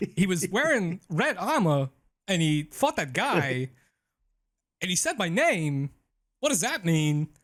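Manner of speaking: Southern accent, lifted high in pitch. Telling a story in character, in a Southern accent turning into Christopher Walken. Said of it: "we need to do a whole podcast with that voice".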